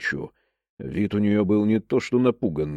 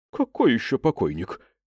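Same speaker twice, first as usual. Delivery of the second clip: usual speaking voice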